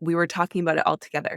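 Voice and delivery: ordinary talk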